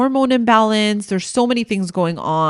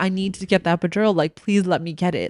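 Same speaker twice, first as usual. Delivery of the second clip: mock tearful pleading woman's voice, quieter, faster; 3 dB quieter than usual. Retelling a woman in hospital begging for an epidural, imitating her crying plea. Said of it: "she was crying and she was like".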